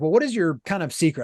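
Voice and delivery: ordinary talk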